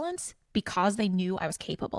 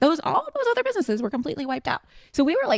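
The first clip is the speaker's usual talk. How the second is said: passionate rush, high pitched and fast. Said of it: "you can hear the passion in my voice".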